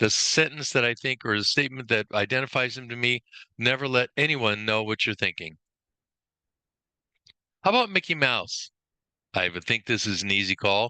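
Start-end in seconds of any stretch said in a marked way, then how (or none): none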